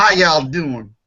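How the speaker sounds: put-on twang accent. Joking about changing a last name, saying it with put-on twang. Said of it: "And say it with a twang".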